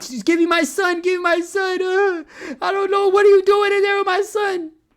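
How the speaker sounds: very high, loud hysterical sobbing. Acting out a father at the door demanding his son, in mock hysterical crying. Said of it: "at your door crying hysterically".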